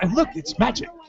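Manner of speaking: showy sitcom-star voice. Telling listeners how you once talked all the time, use your Will Arnett voice. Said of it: "all I did was talk like this".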